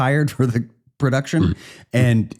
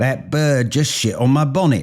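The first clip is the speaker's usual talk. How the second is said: clumsy, fake English accent; 2 semitones higher than usual. Redoing an earlier joke line about a bird: crappy english accent. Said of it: "a crappy English accent like the one I did earlier".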